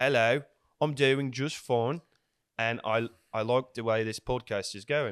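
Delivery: rubbish, poor put-on British accent. Taking a turn at accents on a podcast, rubbish British accent. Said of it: "Your accent is rubbish".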